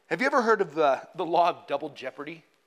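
ordinary delivery

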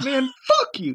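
very high, squeaky, voice-cracking yell. Speaker acts out a bit the friends yell, doing a mock squeaky, cracking yell. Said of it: "it becomes, like, more, like, squeaky, cracky voice".

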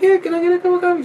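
put-on very high, gentle, mild-mannered old lady voice. Retelling watching a waitress serve an old woman, imitating the old woman, soft-spoken. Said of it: "the old lady's all soft-spoken".

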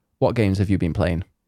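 ordinary delivery

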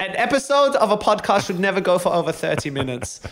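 put-on camp German accent. Podcaster quoting their own past remark about episode length, in a camp german accent. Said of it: "I can only do kind of like camp German accents".

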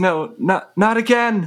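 very high, slow yell from far off. Voicing Peter calling down from the bell tower: yelling from a distance. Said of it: "He's kind of yelling from the bell tower".

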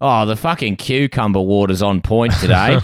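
weathered, grizzled put-on Australian miner accent. Acting out a miner in Kalgoorlie riding the lift: grizzled Australian miner voice. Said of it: "Grizzled Australians in Kalgoorlie taking a lift".

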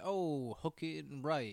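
put-on, slow, swaggering, self-assured cocky drawl. Imitating a character's cocky tone while discussing a football scene: imitating Dennis's cocky tone. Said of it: "the cockiness and, like, the tone of his voice".

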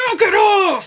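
very high, fierce, violent scream. Retelling how the men scream when breaking up a fight: imitating someone screaming. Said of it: "then they scream and they're even more violent".

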